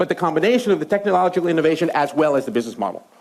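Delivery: fast, rushed lecturing delivery. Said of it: "Am I speaking too quickly?".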